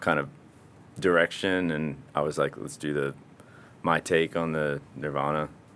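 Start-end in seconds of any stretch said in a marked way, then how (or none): none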